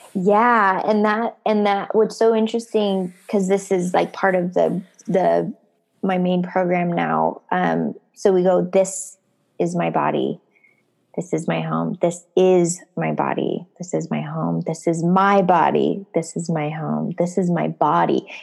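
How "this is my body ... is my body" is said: every single word evenly pressed and emphasized. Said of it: "we emphasize each word".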